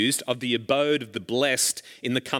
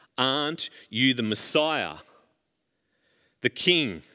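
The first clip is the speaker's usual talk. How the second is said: ordinary talk, nothing marked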